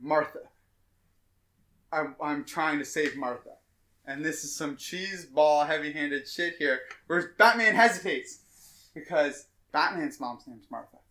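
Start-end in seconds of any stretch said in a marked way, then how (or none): 0.0-3.5 put-on, gasping dying voice. Retelling a film scene where Superman coughs out his last words: imitating Superman's dying breath. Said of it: "in his, like, dying breath".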